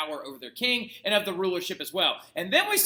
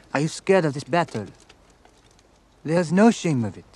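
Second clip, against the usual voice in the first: bad, put-on French accent; 3 semitones lower, 7 dB louder than usual. Quoting a movie character's lines while discussing the film, in a bad French accent. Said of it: "that's a bad French accent".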